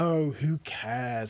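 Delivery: tired, worn-out, weary, dismissive tone. A woman cuts off a friend's chatter about a man, weary. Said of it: "said Cressida wearily".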